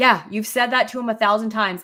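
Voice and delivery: fast, curt, snippy put-on tone. Retelling someone's reply in a disagreement about boxes, imitating a snippy tone. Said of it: "says very like like snippily".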